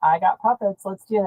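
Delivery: ordinary delivery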